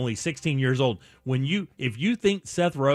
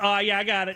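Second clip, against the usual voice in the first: mock cocky, smug, arrogant know-it-all tone; 6 semitones higher than usual. Retelling how the caller answered: imitating an arrogant caller. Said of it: "he turns around and goes".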